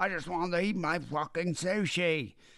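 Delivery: very high, put-on Australian accent. Acting out a man who just wanted his sushi beside dying police officers, in a put-on Australian accent. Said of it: "is that your Australian".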